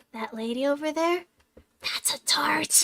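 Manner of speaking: stage whisper. Retelling what a flamboyant uncle whispered about a lady: imitating uncle whispering. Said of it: "whispers to me".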